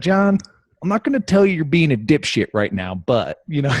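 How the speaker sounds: put-on rasp-heavy, gritty Texas cowboy accent. Speaker quotes a man's favorite lead-in to john, imitating raspy texas accent. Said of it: "my favorite is when he leads in with like".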